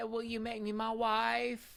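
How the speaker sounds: high, slow country twang, "wife" stretched out. Quoting someone from the episode: imitating Brittany's country accent. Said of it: "very country".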